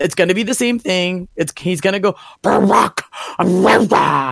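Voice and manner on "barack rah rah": hammy, creaky, rough, blustering rant. Mocking how a wrestling promo always goes: hammy Paul Heyman rant. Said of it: "he's just gonna be the hammiest ham man in the world".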